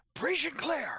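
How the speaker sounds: shouting. Voicing a character who kicks the door down: yelling. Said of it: "you don't have to yell it".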